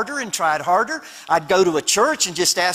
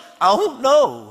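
put-on crying voice, higher; 5 semitones higher than usual. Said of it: "I'm crying".

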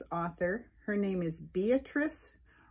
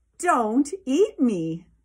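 very loud, high-pitched yell; 6 semitones higher, 10 dB louder than usual. Narrator reading the gingerbread man's cry as he runs out the window, shouting. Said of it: "ran out of the open window shouting".

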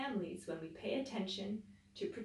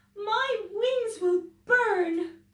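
very high, very loud, long drawn-out cry; 13 semitones higher, 14 dB louder than usual. Owl, one of the animals facing the burning forest, crying out. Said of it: "cried Owl".

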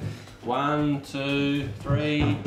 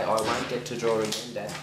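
ordinary talk, nothing marked

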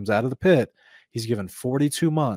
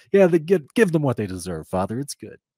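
loud, salty, snarky, mock sassy, sarcastic tone; 3 semitones higher, 5 dB louder than usual. Retelling an angel's response to judgment, in a salty snarky tone. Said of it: "this angel sounds salty".

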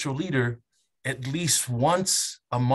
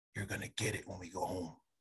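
very quiet, barely audible half-whisper; 7 semitones lower, 15 dB quieter than usual. Retelling how dad bent over and half-whispered in his ear: imitating dad half-whispering. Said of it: "whispers in my ear".

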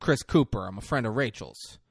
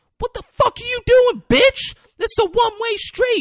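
shrill, very high, full-volume screaming; 12 dB louder than usual. Retelling a girl in the street yelling at the driver who nearly hit her, retelling a screamed outburst. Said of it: "she's screaming at her".

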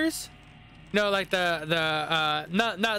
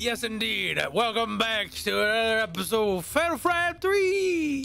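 high, hyped sports announcer broadcast voice; 5 semitones higher than usual. Welcoming viewers back to an episode of Fatal Frame 3 in a sports announcer voice. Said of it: "Why do you sound like a sports announcer?".

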